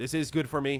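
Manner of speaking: mock mindless drone voice. Mocking how companies treat customers, imitating a mindless drone. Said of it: "treat you like mindless drones".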